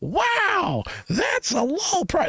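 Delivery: mock distant yell, very high, very slow, drawn-out. Retelling calling out a phrase across a store: imitating a scream across a store. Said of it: "we're screaming this".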